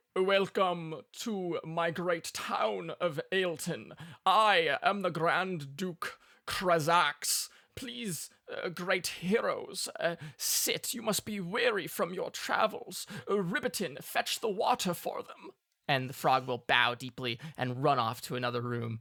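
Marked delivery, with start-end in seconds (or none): 0.2-15.6 high-pitched, unhurried speech. Voicing the red dragon welcoming the great heroes: Grand Duke Krazax voice. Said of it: "who will speak and say".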